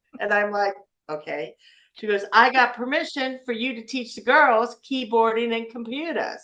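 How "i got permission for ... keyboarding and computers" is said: put-on strong New Orleans accent, raised pitch. Retelling what a teacher came up and told you, imitating Miss Jolene's very New Orleans accent. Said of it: "she had a very New Orleans accent".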